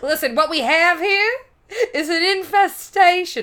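put-on Southern accent. Acting out a psychic brought in to check the place, in a put-on southern accent. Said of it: "I don't know why I made them Southern".

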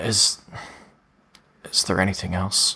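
weak, feeble, halting, strength-drained voice. A character who has just managed to stand asks a question, weak voice. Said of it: "his voice is a little weak right now".

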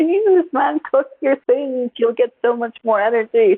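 put-on yelling. Retelling yelling at the TV at a player: imitating someone yelling. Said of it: "Just yelling at it".

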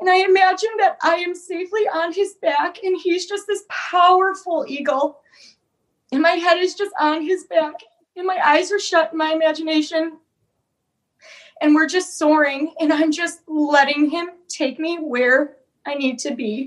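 crying while talking. Recounting a personal experience; crying while talking. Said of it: "it makes me cry right now".

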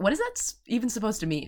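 high-pitched, baffled disbelief. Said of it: "And I'm like".

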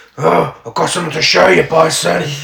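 rough, roughened, creaky caped-hero voice.

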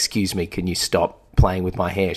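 put-on furious, angry tone. Retelling what they said after someone kept touching their curls: retelling own furious words. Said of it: "through my fury".

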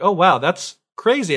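put-on thrilled, delighted, excited and happy tone. Retelling a story where people learn the wife lives: imitating excited people. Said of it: "And they're so excited".

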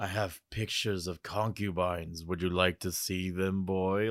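low, creepy, sleazy leering voice. Mocking how a man talks to mr. potter, imitating a creepy pervert. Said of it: "that weird pervert thing of like".

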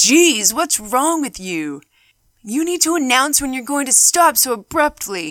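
irritated, gruff, angry man barking loudly. Retelling a man who bumped into the speaker from behind, imitating a man yelling. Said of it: "he yelled out".

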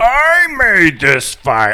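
very loud, slow, high-pitched, drawn-out bellow. Joking about a Hellraiser reboot on an island, doing a Pinhead voice. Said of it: "the scene with Pinhead, you know, going".

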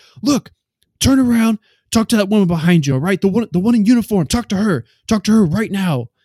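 insistent, loud, high-pitched yelling. Telling a friend how a man yelled at him: retelling a man yelling. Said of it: "he's like yelling at me".

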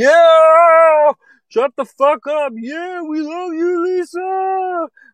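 very high, slow, drawn-out whooping holler. Imagining how the comedy audience should react: mimicking a whooping, hollering crowd. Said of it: "whooping and hollering".

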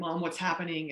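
acted hysterical sobbing, frantic pleading tone. Retelling the daughter's FaceTime call from the ICU: imitating Heather crying hysterically. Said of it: "hysterical and crying".

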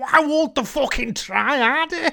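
loud, high, furious angry rant. Retelling how Tony kept stomping around, imitating Tony's angry rant. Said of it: "just kept like stomping round and like going".

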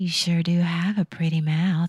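put-on sultry voice. Performing a quoted line for a listener, in a put-on sexy voice. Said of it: "that was sexy".

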